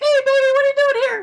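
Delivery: very high, loud, squeaky put-on puppet voice. Recapping a wrestling show, redoing a backstage bit: Jimmy Hart impression. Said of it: "You sound like a Muppet there".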